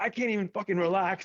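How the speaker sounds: mock fury, very high pitch, pissed off. Retelling an angry phone call from Kenny on vacation: imitating Kenny being pissed. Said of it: "he called me all pissed".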